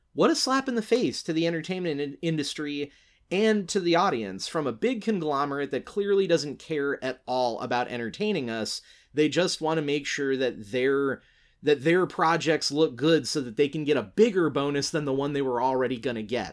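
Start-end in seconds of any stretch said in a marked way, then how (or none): none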